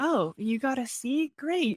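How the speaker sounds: high, cheerful, unbothered parent voice. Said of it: "my parents were like".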